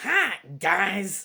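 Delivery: barky, doggy voice. Reading a picture book aloud, voicing the dog Hilda: barking dog voice. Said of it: "give her a barking kind of voice".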